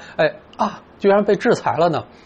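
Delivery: exasperated disbelief, speechless, mildly surprised. Showing how the line sounds when someone is speechless and surprised. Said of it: "就是显得特别无语，意料之外的一个事情".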